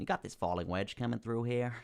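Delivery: put-on American accent. While talking through a market chart, the speaker deliberately drops into another accent for a moment, speaking in an American accent. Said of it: "I just wanted to speak in an American accent".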